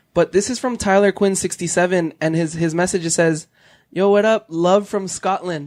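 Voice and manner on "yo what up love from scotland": plain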